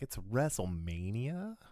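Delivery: sarcastic, mocking rising pitch on "WrestleMania". Showing how to say the event's name sarcastically: sarcastic rising question intonation. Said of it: "Going up at the end with the question".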